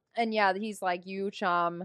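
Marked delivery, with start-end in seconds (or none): none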